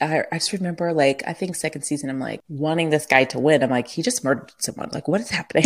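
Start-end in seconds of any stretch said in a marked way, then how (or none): none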